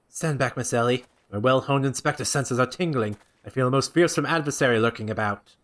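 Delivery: low, pompous, florid voice declaiming grandly. In a game playthrough, the inspector tells Miss Ellie to stand back: Hildibrand voice. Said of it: "We're on something of a tight schedule here, Inspector. / Father, could it be the order of unmitigated murderous rage that I felt was not our quarry, but you? / Doing his voice is tearing my throat ap".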